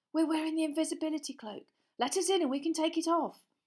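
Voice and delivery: high, hissing voice. Standing unseen at someone's cabin door, hissing. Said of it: "Harry hissed".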